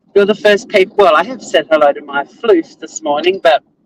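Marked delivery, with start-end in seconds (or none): none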